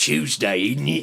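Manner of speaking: put-on British accent. Making fun of British folk together with another speaker, put on a Michael Caine accent. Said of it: "Michael Caine's accent".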